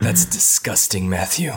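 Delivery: close-mic movie trailer voiceover voice. Retelling a guest's reaction to a crude joke on the show: Lee Forrest's movie trailer voice. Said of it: "he did that movie trailer voice he does".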